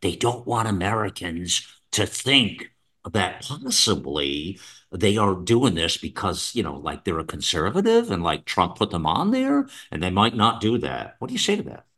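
secret-sharing, conspiratorial, hushed half-whisper. Speaking to another speaker as if sharing a real secret, half-whispering. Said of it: "I got to whisper this".

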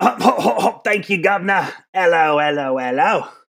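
belted loud, high, badly done Cockney accent.

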